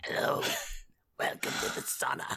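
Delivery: put-on whispered, hushed old man voice. Describing an old man who sits in the sauna greeting newcomers, in an old jacuzzi man voice. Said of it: "this old jacuzzi man voice".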